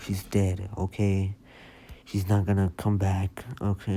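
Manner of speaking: soft-spoken. Acting out the social worker's blunt words to a crying boy, soft voice. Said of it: "but like in a soft voice".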